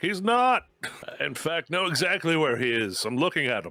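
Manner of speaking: high yelling, heard from a distance. Playing a character calling back to a companion after splitting up: yelling back. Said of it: "Gaius yells back".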